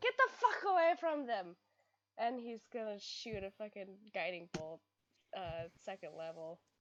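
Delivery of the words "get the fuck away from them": very loud, high-pitched, swooping yell. Voicing a character warning enemies off: shouting as Vias. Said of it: "Vias just basically shouts".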